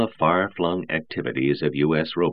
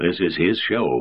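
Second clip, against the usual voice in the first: even, level-toned, much slower. Robertson answers Eisenmuth's question about his man; evenly. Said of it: "said Robertson evenly".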